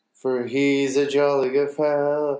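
ordinary talk

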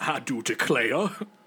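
mocking voice of an old executive. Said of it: "I'm sure they all sound like that".

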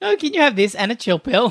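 cheeky server with attitude. Retelling a movie scene, quoting a waitress: imitating a sassy waitress.

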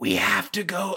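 hoarse, raspy, voiced stage whisper. Showing improv students how to whisper on stage: raspy Macho Man Randy Savage whisper. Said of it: "sounds a little bit like Macho Man Ran-, Randy Savage".

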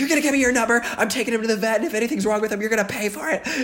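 mock very high, rushed, furious yelling tirade. Retelling yelling at a man over his dog: retelling angry mommy mode. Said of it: "autopilot angry mommy mode".

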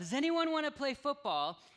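put-on, high, carrying yell. Retelling how Pastor Zach called down a dorm hallway: imitating Pastor Zach yelling. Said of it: "He yelled".

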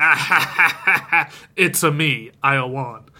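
mock villainous gloating laugh, very slow and drawn out. Retelling a scene where a character laughs in the bathroom: imitating a gloating laugh. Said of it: "in the bathroom laughing".

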